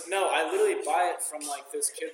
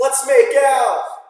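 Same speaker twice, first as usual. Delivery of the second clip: very high, very loud, shrill yell; 11 semitones higher, 17 dB louder than usual. Joking about yelling come-ons to a girl at a party; mock yell. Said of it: "you just have to, like, yell it".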